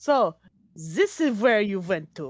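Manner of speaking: very bad, terrible fake French accent. Voicing a woman who speaks up in the scene, in a very bad french accent. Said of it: "a woman with a very bad French accent speaks up".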